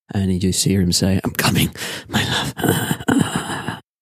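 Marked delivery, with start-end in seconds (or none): 1.2-3.7 dying voice, dragged out very slowly. Game master voices a bleeding, mortally wounded man: dying man's last words. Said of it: "he kind of coughs a couple of times".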